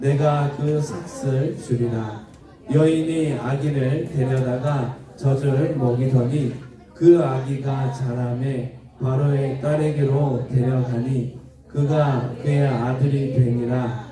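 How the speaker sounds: slow, deliberate, word-by-word delivery.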